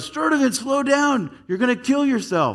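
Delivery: very high, yelled shout. Recalling running a lap at school, voicing the PE coach: retelling a coach's yell. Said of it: "the coach yelled".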